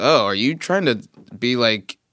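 ordinary talk

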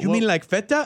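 mock Latin American Spanish-accented English. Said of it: "try to affect the accent".

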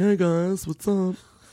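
high, slow, drawn-out robot character voice.

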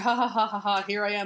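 play-acted, showy, flamboyant ha-ha-ha laugh. Retelling a comic scene, imitating the Creeper laughing. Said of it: "he just starts laughing".

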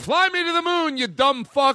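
very high, slow, drawn-out fake-angry yell. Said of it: "where you can yell at them".

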